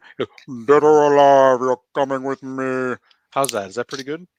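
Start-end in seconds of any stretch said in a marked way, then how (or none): 0.2-3.0 loud, level, slow monotone. Doing an impression for another speaker: RoboCop impression. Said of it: "this is my impression".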